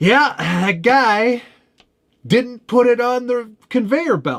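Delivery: mock irate, very high-pitched, loud griping tone. Retelling a phone call from a woman in Atlanta, imitating an irate woman. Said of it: "she's irate before I even like".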